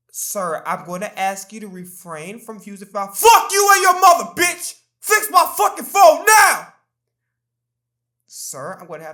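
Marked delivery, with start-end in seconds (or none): 3.1-6.7 very loud, high, raging angry yell. Playing a customer demanding an office worker fix the phone, yelling. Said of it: "If you stop yelling".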